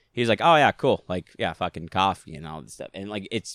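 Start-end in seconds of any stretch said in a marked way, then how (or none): 0.4-2.8 put-on Boston accent. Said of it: "his voice that he does".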